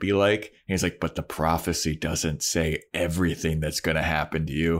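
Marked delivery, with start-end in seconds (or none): 1.0-4.8 imitated creepy character voice. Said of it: "all creepy".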